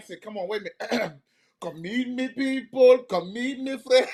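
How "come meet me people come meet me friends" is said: best-effort put-on Jamaican accent, pitched up. On The O'Neill Show, speaker tries their best Jamaican accent. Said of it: "my best Jamaican accent".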